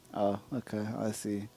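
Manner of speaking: depressed-sounding, glum, very slow and drawn out. Answering a co-caster's offer to speak another language, sounding depressed. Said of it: "bro, why do you sound so depressed?".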